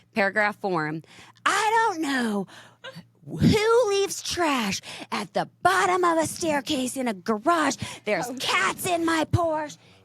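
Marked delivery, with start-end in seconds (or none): 1.5-9.8 very high, slow, freaked-out delivery. Reading aloud an upset text from Steve: imitating Steve freaking out. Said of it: "He's freaking out".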